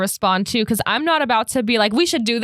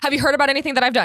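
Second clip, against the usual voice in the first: mock anxious voice, higher-pitched; 3 semitones higher than usual. Describing a friend sending many worried texts: imitating an anxious friend. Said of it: "when he has anxiety and he sends".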